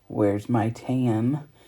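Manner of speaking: very deep, low voice. Retelling what a nephew said, imitating a very deep voice. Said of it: "in his very deep voice".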